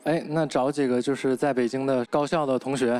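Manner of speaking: ordinary delivery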